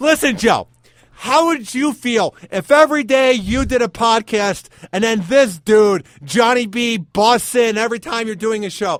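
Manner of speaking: fed-up, loud, high-pitched complaining shouted rant. Complaining that another speaker keeps busting in on the show: mock yelling. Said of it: "Why are you yelling, [name]?".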